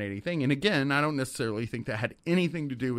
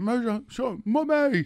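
put-on Welsh accent, higher pitch; 11 semitones higher, 4 dB louder than usual. Imitating David talking in his sleep: imitating David's Welsh accent. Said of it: "a Welsh accent".

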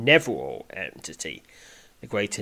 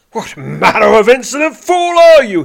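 very high, loud, shrill roaring snarl; 13 semitones higher, 18 dB louder than usual. Narrator reads Whatgrip confronting his opponent mid-fight, snarling. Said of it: "He snarls".

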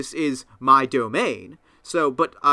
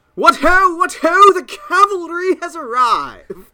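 piercing shriek, very high and very loud; 8 dB louder than usual. Narrating a scene, voicing a spider swinging down on a web, screaming. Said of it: "And it just screams".

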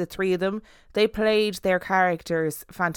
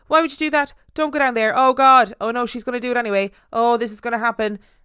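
loud angry yelling; 4 semitones higher, 6 dB louder than usual. Retelling watching a horror film with a brother: imitating shouting at the TV. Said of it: "We were shouting at the T V".

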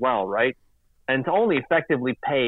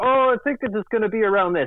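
high, put-on character voice; 9 semitones higher than usual. Quoting a reporter's prediction about a contract in a Kermit voice. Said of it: "I use my Kermit voice".

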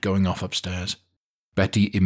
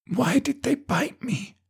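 drawn-out, high, slow half-whisper; 3 dB quieter than usual. A bitten woman in an emergency room asks the nurse a question, half-whispering. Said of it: "the woman whispered".

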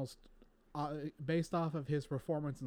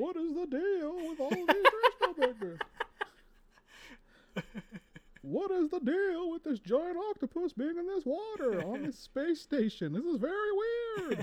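very high, loud stand-up comic delivery; 7 dB louder than usual. Joining in, voicing Luke Skywalker as Seinfeld: Jerry Seinfeld doing Luke Skywalker. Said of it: "like if Seinfeld was doing".

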